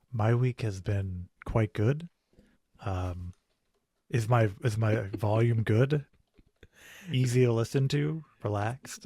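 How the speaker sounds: smooth, relaxed radio voice. Answering the host's question about his week, in an NPR radio voice. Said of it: "I'm doing my best N P R voice today".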